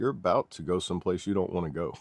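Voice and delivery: ordinary talk, nothing marked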